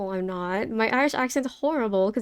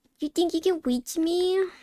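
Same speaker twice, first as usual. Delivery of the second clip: sugary put-on high cutesy uwu voice; 6 semitones higher than usual. Retelling what they said while someone climbed a ladder; uwu voice. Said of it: "me doing the Uwu voice".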